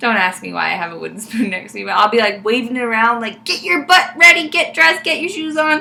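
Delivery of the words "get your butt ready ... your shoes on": mock frantic shouting, high-pitched. Parent recounting sunday mornings hurrying the kids out, retelling yelling at the kids. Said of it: "I'm like yelling at everybody".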